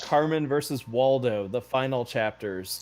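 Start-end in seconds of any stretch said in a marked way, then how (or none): none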